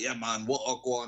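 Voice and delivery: put-on Jamaican way of talking. Retelling how her manager spoke to her: imitating a put-on jamaican accent. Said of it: "started talking like he was Jamaican".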